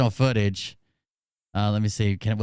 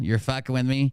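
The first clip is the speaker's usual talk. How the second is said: ordinary talk, nothing marked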